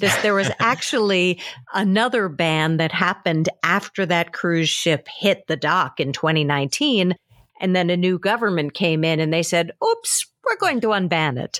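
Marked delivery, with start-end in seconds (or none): 9.8-11.6 terrible put-on Italian accent with sing-song swoops. Speaker quotes what a new government said, in a terrible Italian accent. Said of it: "that was my terrible Italian accent".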